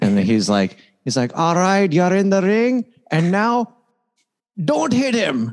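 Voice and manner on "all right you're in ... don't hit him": very high-pitched, put-on Indian accent. Retelling an old stand-up bit as a boxing instructor: imitating Gandhi with an Indian accent. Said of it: "Was the accent as good then as it is now?".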